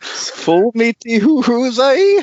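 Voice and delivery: really terrible put-on Scottish accent. Speaker joking with co-hosts: really terrible Scottish accent. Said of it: "a really terrible Scottish accent".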